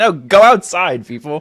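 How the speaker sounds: mock yell, loud, slow and high.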